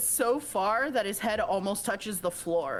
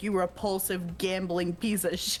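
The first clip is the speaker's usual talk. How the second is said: ordinary talk, nothing marked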